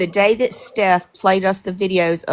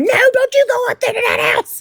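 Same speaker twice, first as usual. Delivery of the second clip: mock shrill, desperate, very high shrieked scream; 4 dB louder than usual. Retelling a plea to friends not to enter the house: imitating own screaming. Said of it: "And I'm screaming, going".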